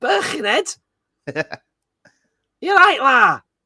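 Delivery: fake Scouse accent. Apologizing to Liverpudlians while trying the accent, bad Liverpudlian accent. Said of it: "because I would go".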